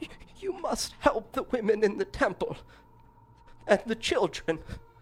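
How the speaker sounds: weak, faint, high-pitched pleading woman's voice. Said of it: "a faint female voice".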